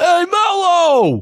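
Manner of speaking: high, put-on New York street accent, drawn out. Speaker imitates people on the street greeting Melo: New York City accent impression. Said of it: "Is that your New York City impression".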